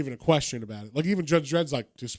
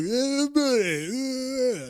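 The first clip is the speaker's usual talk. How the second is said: very high voice with eh stretched long; 10 semitones higher than usual. Retelling Judge Dredd riding up on his bike: Stallone voice. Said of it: "he says it in his Stallone voice".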